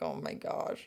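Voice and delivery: mortified, embarrassed, breathy whisper. Retelling own reply to people who ran over after a fall: retelling being super embarrassed. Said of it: "super embarrassed".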